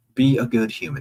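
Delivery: ordinary delivery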